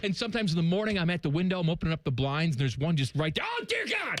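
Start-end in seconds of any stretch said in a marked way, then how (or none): 3.5-4.2 shouting, pitched higher. Retelling finding a deer at the window in the morning: retelling yelling at a deer. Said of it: "And I'm yelling at it".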